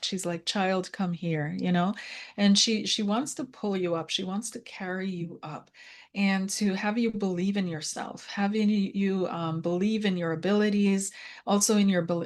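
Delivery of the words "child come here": put-on gentle, soft voice. Relaying what a spirit says to the questioner: imitating a gentle, soft voice. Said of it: "She's being very gentle, very soft".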